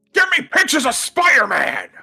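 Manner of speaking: high-pitched, loud yell. Egged on by the other speaker, quoting the movie: J. Jonah Jameson impression. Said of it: "you can do a pretty decent J Jonah".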